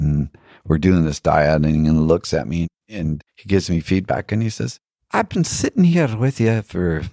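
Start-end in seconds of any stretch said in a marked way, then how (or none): 5.1-7.0 bad put-on Irish accent, high and sing-song. Speaker retells what an old man told him, in a bad Irish accent. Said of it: "I'm not doing a very good Irish accent".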